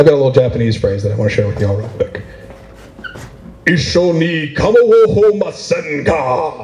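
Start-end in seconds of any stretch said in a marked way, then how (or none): 3.7-6.6 fierce battle cry, high and very slow. Showing how a polite Japanese phrase sounds as a fierce battle cry. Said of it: "Sounds like a samurai battle cry, if I say it that way".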